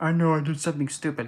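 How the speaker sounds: put-on sad, mournful voice. Voicing a sad figure on a tarot card: acting out a sad figure. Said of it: "all sad".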